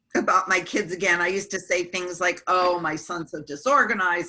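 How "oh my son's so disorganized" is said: ordinary talk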